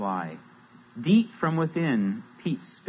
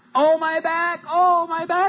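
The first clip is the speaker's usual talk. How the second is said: very high, hollered-out cry; 7 dB louder than usual. A narrator reads Sly the Snake calling after Pete as he leaves, hollering. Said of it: "hollered Sly the Snake".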